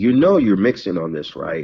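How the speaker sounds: mimicked whispering. Retelling being pulled to the side and told something: imitating a whisper. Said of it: "he kinda whispers in my ear".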